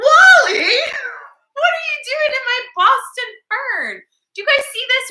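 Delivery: mock surprised tone.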